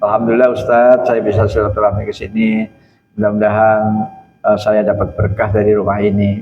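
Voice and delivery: calm, unraised voice. Showing how a guest should greet the Ustadz, speaking in a calm, unraised voice. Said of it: "Suara kita slow aja".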